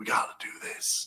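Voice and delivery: soft, breathy whisper under the breath. Speaker describes Biden's tirades to a listener: whispering like Biden. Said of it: "he's whispering".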